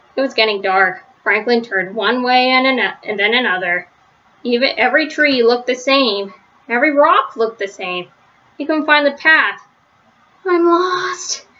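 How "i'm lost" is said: tiny, high, shrunken little voice. Franklin, alone as it gets dark and unable to find the path, speaks in a tiny little voice. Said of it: "said Franklin in a tiny little voice".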